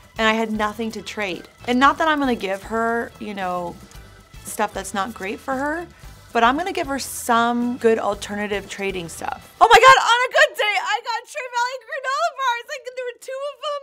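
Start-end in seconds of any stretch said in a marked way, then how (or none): 9.6-13.9 shrill, loud, high-pitched yelling. Remembering trading her school lunches, the speaker gets carried away, yelling. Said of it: "I'm sorry, I'm yelling".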